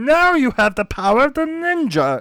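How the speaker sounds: very high, squeaky, cartoonish alien voice. Recalling a character from an old TV show, high-pitched Ninjor voice. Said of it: "really high pitched".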